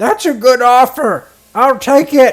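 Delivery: yelling every word, shrill, very high and loud. Reading a character's reply to the player's question; screaming while talking. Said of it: "she screams at you when she talks".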